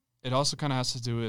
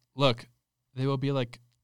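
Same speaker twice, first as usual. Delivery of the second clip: ordinary talk, nothing marked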